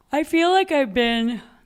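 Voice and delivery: yawning while talking. Before flying to San Francisco, the speaker talks to viewers while yawning. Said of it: "Sorry, I'm yawning".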